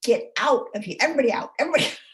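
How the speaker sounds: high, shrieked screaming. Retelling a past Thanksgiving in the kitchen, retelling a scream. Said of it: "I stood in my kitchen and screamed".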